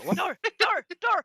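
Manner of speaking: each word barked like a dog. Voicing dogs running out through the door: barking like a dog. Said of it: "you can hear them all kind of barking".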